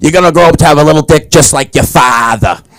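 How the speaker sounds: put-on heavy Boston accent, needling and teasing. Retelling what mom always said to a child: imitating a thick Boston accent. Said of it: "She's got a thick Boston accent".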